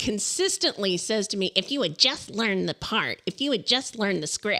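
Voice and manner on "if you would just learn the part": storybook witch voice, scolding, lecturing tone. Quoting what the other speaker consistently says: Wicked Witch voice. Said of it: "Like the Wicked Witch".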